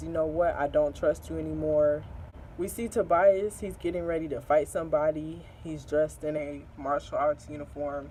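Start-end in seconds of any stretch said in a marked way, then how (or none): none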